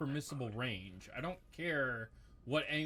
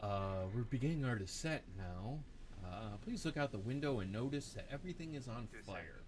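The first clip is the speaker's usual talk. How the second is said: calm, low, soothing pilot intercom voice; 4 semitones lower, 3 dB quieter than usual. Mocking a game's missing in-flight announcement: calm airline pilot voice. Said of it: "no pilot with a nice, you know, calm voice".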